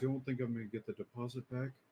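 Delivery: whining little whimpering voice. Telling a story, the speaker acts out the man's reply: imitating a little whimper. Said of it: "he whimpers a little bit".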